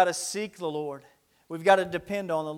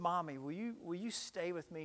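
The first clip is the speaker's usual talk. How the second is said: put-on scared, trembling, shaking child voice, pleading; 14 dB quieter than usual. Retelling a scared child asking Mommy to stay, imitating a child's trembling voice. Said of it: "ask with a trembling voice".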